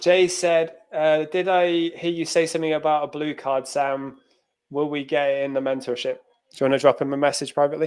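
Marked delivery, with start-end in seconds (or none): none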